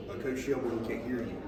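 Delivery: normal talking voice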